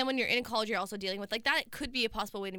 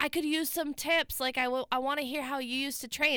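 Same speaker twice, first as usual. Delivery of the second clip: mock yelling, much higher; 4 semitones higher than usual. Retelling what a man yelled after her as she walked away, imitating a man yelling. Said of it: "And he's yelling this".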